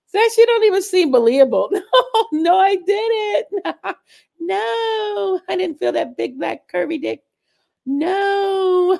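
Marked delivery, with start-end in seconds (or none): 1.7-8.9 mock giggly, laughing tone, higher. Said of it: "She couldn't even say that with a straight face".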